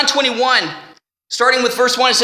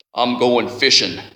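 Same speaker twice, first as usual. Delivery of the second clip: big, deep, lowest bass voice; 13 semitones lower than usual. A speaker imagining what Simon Peter said, in a big deep bass voice. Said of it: "he probably said in a big, deep bass voice".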